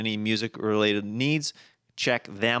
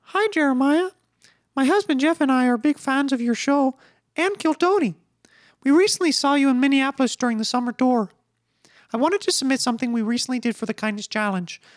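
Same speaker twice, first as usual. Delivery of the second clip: very high, loud Minnesota-accented cartoon voice; 5 dB louder than usual. Reading a listener's letter aloud to the host, in a Minnesota Minnie Mouse voice. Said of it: "her voice sounds like Minnie Mouse if she were from Minnesota or Canada".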